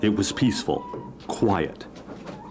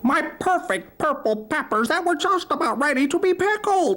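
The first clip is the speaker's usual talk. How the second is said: very high, henlike clucking voice; 4 dB louder than usual. Narrator reading a story, voicing the robbed hen answering, clucking hen voice. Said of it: "she clucked, / She answered".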